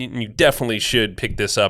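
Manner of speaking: plain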